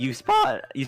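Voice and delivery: voice cracking and breaking. As DM, describing the approach to Sanctuary, voice cracking. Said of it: "oh terrible voice crack".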